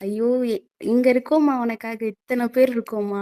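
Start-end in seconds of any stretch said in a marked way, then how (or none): none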